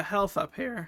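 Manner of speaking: voice cracking. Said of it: "my voice just cracked".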